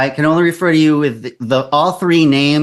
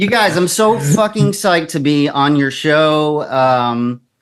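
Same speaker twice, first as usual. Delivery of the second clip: usual speaking voice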